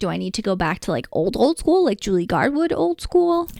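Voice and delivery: ordinary talk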